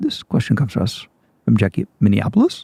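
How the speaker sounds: rising question-like tune on Jackie and Minneapolis. Redoing the listener-question intro: upspeak at the end of each phrase. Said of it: "Like you have to up, up. There has to be upspeak at the end of everything".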